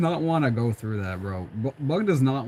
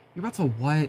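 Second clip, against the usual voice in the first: put-on exhausted voice; 2 semitones higher than usual. Imitating Hornet answering Bug: imitating an exhausted voice. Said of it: "she just sounds exhausted".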